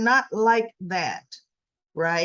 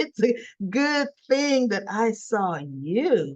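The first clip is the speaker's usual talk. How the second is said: put-on slow, sweet seductive voice, drawing out "you". Retelling a woman's reply to a man in a story, mock-seductive sweet voice. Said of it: "she's talking in this, you know, more seductive, sweet voice".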